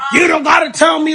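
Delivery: high, screaming, yelling outburst. Retelling a conversation where the other woman starts yelling: imitating someone yelling. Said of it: "she starts yelling, screaming".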